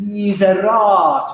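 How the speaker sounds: slow miserator with stress on the third syllable. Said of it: "that's the stress of the word".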